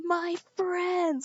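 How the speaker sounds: put-on sudden yell, very high and loud. Recounting a friend sprinting up to the group at night, retelling a loud shout. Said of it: "like really loudly".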